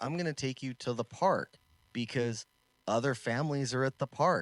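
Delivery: ordinary talk, nothing marked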